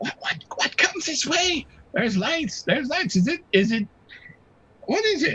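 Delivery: very high, screechy, raspy creature voice. Voicing a creature that hears lights approaching: screechy, raspy Finnick voice. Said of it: "the screechy, raspy voice of the Finnick".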